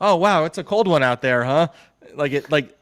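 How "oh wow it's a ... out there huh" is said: cheery, bright, raised voice, tossed off sunny. Retelling press conference openings, imitating Nathaniel Hackett all happy-go-lucky. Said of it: "he'd be all happy-go-lucky".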